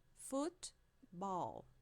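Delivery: football with foot as the strong syllable. Teaching english word stress in portuguese, stress on foot in football. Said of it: "a sílaba forte no foot".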